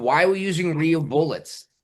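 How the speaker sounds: mild, contained yell, only a suggested scream. Retelling what the wife said afterward: imitating someone screaming. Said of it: "she screamed".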